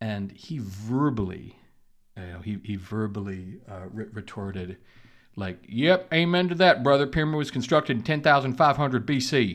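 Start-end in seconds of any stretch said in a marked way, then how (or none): 5.7-9.5 put-on very loud, high, poorly done Alabama accent. Retelling a man's verbal retort, in a poor Alabama accent impression. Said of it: "I probably did his Alabama accent poorly".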